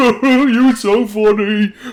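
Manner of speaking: talking while laughing jauntily. Voicing a courtier beside the throne: laughing jauntily. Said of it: "an individual laughing jauntily".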